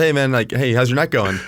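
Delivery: super friendly, upbeat, cheerful voice. Retelling greeting an older man at the grocery store: imitating own super friendly greeting. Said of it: "super smiley and friendly".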